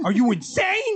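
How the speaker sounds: put-on Chicago accent, flying off the handle. Acting out how Frankie answers when baited, imitating Frankie's Chicago accent. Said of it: "With that Chicago accent".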